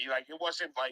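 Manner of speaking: normal talking voice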